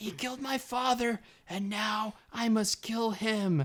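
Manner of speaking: very high, weedy, wimpy little voice. Quoting a man who was talking up here, in a high-pitched imitation. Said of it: "he's talking like up here".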